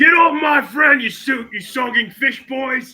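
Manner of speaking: gurgling shout. A player voices their orc yelling at a creature while underwater: gurgling yell. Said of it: "The orc yells back in a gurgling way".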